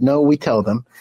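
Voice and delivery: put-on broken, halting Polish accent. Speaker quotes the immigrant from Poland who ran the ward, broken Polish accent. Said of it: "in his broken Polish accent".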